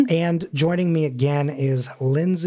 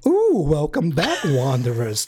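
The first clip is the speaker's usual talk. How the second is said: put-on sing-song character voice, pitch swooping all over. Opening the episode in a put-on voice: Ed Wynn voice. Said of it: "how to do this voice".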